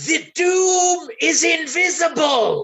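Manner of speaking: very loud, very high-pitched stage whisper. Player announcing his character's action mid-fight, very loud stage whisper. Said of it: "whisper in a very loud stage whisper".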